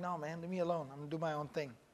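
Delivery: low, soft, hushed and dismissive.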